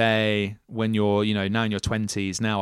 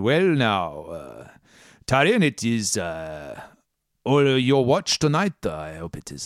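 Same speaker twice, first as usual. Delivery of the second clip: put-on vague European accent, swooping sing-song pitch, now stretched. Game master voicing Grune at the helm, speaking to Taryn on night watch, vague German-or-French accent. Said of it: "I don't know what this accent is. It is something like German or French".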